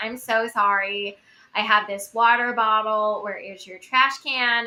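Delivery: put-on American accent, slow and careful. Retelling asking Americans where to throw away a water bottle, American accent. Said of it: "speak with an American accent".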